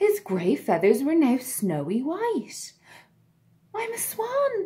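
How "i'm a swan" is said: very high-pitched, joyful, happy cry. Narrator reads the ugly duckling seeing its reflection in the lake, crying out happily. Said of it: "the ugly duckling cried happily".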